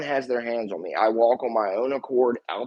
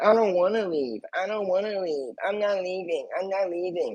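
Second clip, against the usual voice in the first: put-on whiny little-kid voice, pitched up; 7 semitones higher than usual. Retelling how the lawyer quoted him in closing argument: imitating a whiny little kid. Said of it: "Like a little kid".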